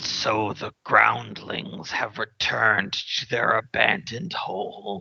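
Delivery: gravelly, echoing creature voice. Game master voicing a skull speaking from an altar, gravelly echoing skull voice. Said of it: "As a gravelly voice echoes from it".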